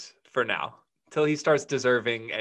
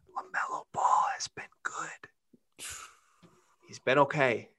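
hushed, breathy whisper under the breath; 3 semitones higher, 3 dB quieter than usual. Telling the folks quietly so no one gets too excited: whispered. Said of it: "I'm going to whisper it so no one gets too excited".

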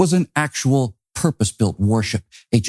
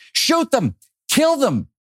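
very high-pitched shouting. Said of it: "he shouted".

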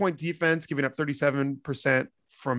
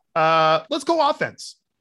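yelling, higher pitch, much slower pace; 2 semitones higher, 5 dB louder than usual. Move a discussion of a team's game on to the next part, yelling. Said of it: "Sorry for yelling there".

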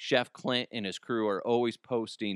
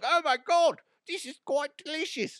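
bad put-on celebrity-chef voice, very high. Imagining what the chef would say about the barbecue: Gordon Ramsay impression. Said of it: "Doesn't sound like him at all".

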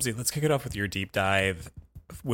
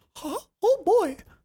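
put-on cartoon mouse voice; 6 dB louder than usual. On a podcast, speaker slips into a Mickey Mouse voice. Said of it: "for using that voice".

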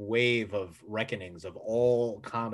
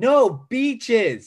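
put-on girl's scream, higher and louder; 14 semitones higher, 14 dB louder than usual. Retelling how the girl kept screaming her suggestion: imitating a girl screaming. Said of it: "the girl kept screaming".

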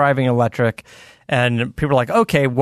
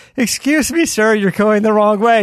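put-on sweet old British lady voice, higher pitch; 9 semitones higher, 3 dB louder than usual. Retelling an old british lady speaking to a man going the wrong way, nice little old british lady voice. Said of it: "this nice little old British lady".

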